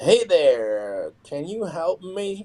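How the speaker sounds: very slow, drawn-out, high-pitched drawl. Retelling a late-night phone call from a caller: imitating a slow talker. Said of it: "this guy literally sounded like this".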